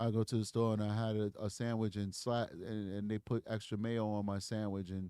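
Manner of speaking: very low, flat, low-energy monotone drone. Showing what truly flat speech sounds like, unlike normal conversation: flat voice. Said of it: "Flat is this".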